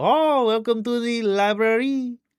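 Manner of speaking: exaggerated French accent on library. Speaker recalls repeatedly saying a word for laughs, exaggerated French accent. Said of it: "saying library like I was French".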